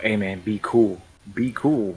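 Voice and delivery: hushed, half-whispered, under the breath. Half-whispering a warning to a companion in character: half-whispering. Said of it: "I just whispered to Michael".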